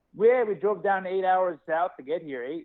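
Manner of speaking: put-on Canadian accent. Recalling a show in Calgary, the speaker quotes some dudes in a stereotypical Canadian accent. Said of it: "stereotypical Canadian accent".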